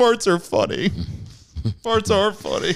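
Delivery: very high, tearful, blubbering sobbing cry. Retelling a show scene where Louis breaks down, imitating Louis crying. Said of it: "just as he's crying".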